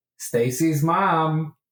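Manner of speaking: high, teasing, jeering, called-out voice. Playing a character, calling after a boy as he walks away, yelling out. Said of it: "I yell out".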